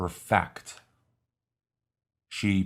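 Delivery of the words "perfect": perfect, stress on second syllable -fect. Explaining the word used as a verb, with stress on second syllable of perfect. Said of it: "the accent is on the second syllable".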